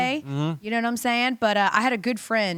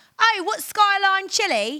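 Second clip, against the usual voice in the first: put-on British accent, very high and drawn out; 9 semitones higher than usual. Imitating a British man tasting chili, put-on British accent. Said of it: "any excuse to do a great British accent".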